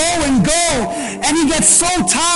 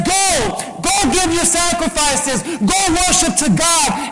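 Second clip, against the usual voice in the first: ordinary talk, nothing marked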